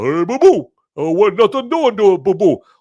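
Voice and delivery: loud, high voice with big, wide pitch swings. Trying an Andre the Giant impression that comes out as Yogi Bear voice. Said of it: "Yogi Bear".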